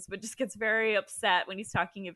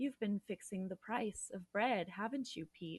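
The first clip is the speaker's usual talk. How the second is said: put-on robot voice, quieter; 10 dB quieter than usual. Retelling how an interviewer questioned his guest, in a HAL 9000 robot voice. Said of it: "talks like the HAL 9000 robot".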